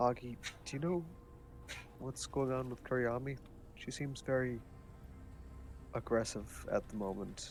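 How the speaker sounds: hushed, discreet, quiet speech under the breath. Voicing a character talking to another character: in a rather low voice. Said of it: "in a rather low voice".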